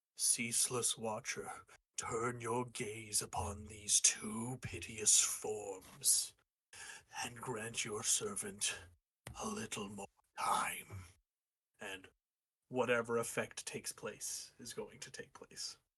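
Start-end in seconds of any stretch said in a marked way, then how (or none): 0.2-11.1 deep-voiced, low calling out. Player's character calls out to the Ceaseless Watcher, in a low, deep voice. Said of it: "in a low, deep voice, he's going to call out".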